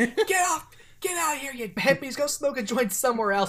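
put-on full holler. Retelling a film scene where a character yells at hippies: imitating a yell. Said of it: "just starts yelling at them".

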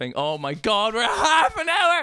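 high, loud, can't-stop-laughing speech through words. Starting the intro story, the speaker can't stop laughing. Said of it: "I couldn't stop laughing".

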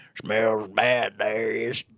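imitated Southern accent. Retelling a line from a deleted movie scene: imitating a Southern accent. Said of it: "that fucking Southern accent from the deleted scene".

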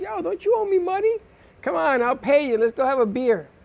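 put-on New York street accent. Retelling what a guy from New York said to him, Brooklyn accent. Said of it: "Like that Brooklyn accent".

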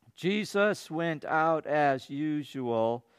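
mock stumbling, unrehearsed reading. Showing how people in churches read scripture they have never read: imitating a stumbling first-time reading. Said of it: "They read it like this".

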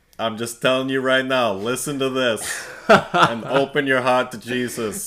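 very loud, high-pitched put-on New York accent. Asked for a last New Yorker line at the end, in a New York accent. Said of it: "Any last New Yorker accent you want".

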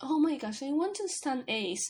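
ordinary delivery

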